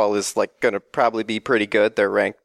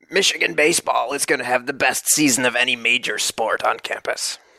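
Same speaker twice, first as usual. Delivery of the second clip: put-on ship's pirate voice; 3 semitones higher than usual. Asked for his hottest take, the speaker answers in a pirate voice. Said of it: "that was more of like a pirate voice".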